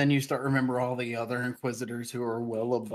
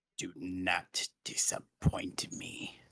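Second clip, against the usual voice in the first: very slow, breathy whisper, every word dragged; 5 semitones lower, 6 dB quieter than usual. Voicing an emperor who looks down at a player character: Palpatine voice. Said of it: "Palpatine looks down at you, Jafon. And he goes".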